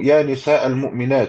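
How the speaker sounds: ordinary talk, nothing marked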